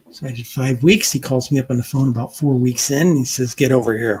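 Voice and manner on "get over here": put-on pirate tone. Retelling the editor calling on the phone: Dread Pirate Roberts tone. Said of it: "he had that tone like the Dread Pirate Roberts from Princess Bride".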